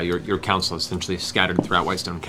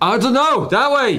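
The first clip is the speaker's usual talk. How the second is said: shrill, very high, loud, full-throated yell; 8 dB louder than usual. In a tabletop game, answering another character who asks which way, shouting.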